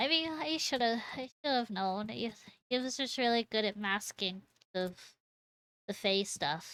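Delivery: put-on pathetic, sniveling, small, soft little-child voice. In a roleplay scene, a character looks at you and speaks, sniveling like a pathetic little child. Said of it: "sniveling, pathetic little child".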